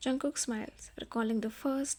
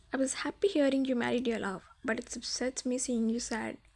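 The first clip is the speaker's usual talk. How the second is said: usual speaking voice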